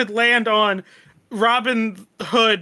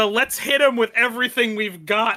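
normal talking voice

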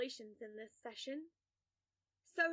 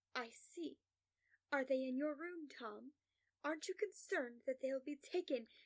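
ordinary delivery

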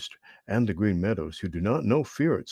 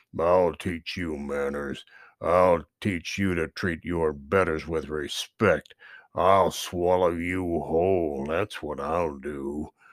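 growling; 6 semitones lower than usual. A narrator reads the bear's line to Chatter, growled. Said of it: "growled Buster Bear".

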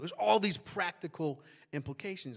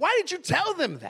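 mock, very high-pitched, loud, furious, raised voice; 11 semitones higher, 7 dB louder than usual. Retelling his own reply to her news: imitating own angry question. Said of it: "I was so mad at her".

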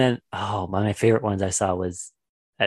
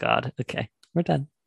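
plain

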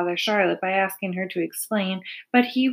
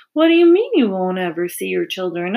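ordinary delivery

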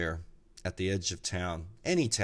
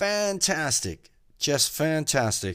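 raised, pitched-up, hollered shout; 8 semitones higher, 6 dB louder than usual. Telling a joke, the speaker voices the driver's reply, retelling a shout. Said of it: "the driver shouts back".

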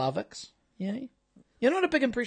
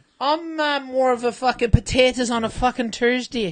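bad put-on Irish accent, louder; 3 semitones higher, 6 dB louder than usual. Taking a turn at an Irish accent on Saint Paddy's Day: bad Irish accent. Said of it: "with an Irish accent".

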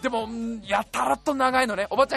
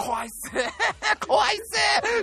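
put-on loud laughing, much higher, slower; 9 semitones higher than usual. Acting out their past self saying they were scared, retelling laughing loudly. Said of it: "ゲラゲラ笑いながら".

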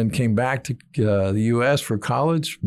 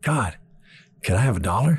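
put-on excited, eager little boy voice. Telling a joke, voicing a little boy asking god: excited little boy. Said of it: "the little boy gets excited".

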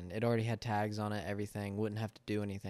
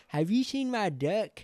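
put-on very high, loud country kid voice; 11 semitones higher, 8 dB louder than usual. Retelling what the visitor at the door first said, in a country kid voice. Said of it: "In like the most country like kid voice".

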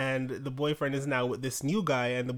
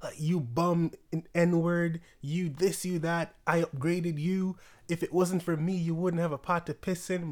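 mock angry tirade, much higher pitch; 4 semitones higher than usual. Retelling a man who suddenly goes in on his boyfriend in his posts, imitating him berating his boyfriend. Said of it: "he just starts going in on the guy".

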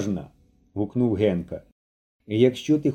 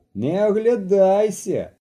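clear, ringing shout, pitched high; 8 semitones higher than usual. Boys play a hiding game as another boy trudges to the shed: ringing shout. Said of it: "дзвінко крикнув".

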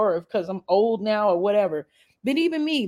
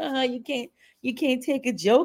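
playful joking voice; 4 semitones higher than usual. Retelling what a woman said after the baby's cry: retelling a joking remark.

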